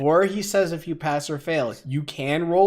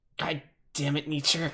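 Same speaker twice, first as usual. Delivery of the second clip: quiet muttering under the breath, getting quieter; 6 dB quieter than usual. Playing a character who curses a companion: muttered under breath. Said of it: "I kinda mutter that under my breath".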